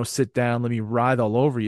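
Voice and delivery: ordinary talk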